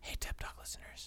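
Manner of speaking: soft, barely voiced whisper. Feeding lines to the other speaker to repeat in a cool way; whispering. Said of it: "I'm going to whisper to you what to say".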